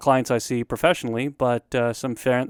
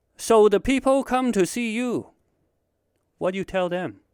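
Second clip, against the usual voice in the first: earnest, inquisitive, curious tone, pitched up; 9 semitones higher than usual. Retelling what a grandfather asks about therapy work: impression of his grandfather. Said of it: "That's my little impression of him".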